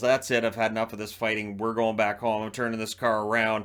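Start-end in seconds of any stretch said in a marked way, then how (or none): none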